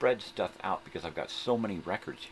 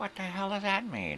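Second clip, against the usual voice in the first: high, squeaky, baffled disbelief. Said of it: "and I'm like".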